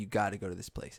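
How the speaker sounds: ordinary talk, nothing marked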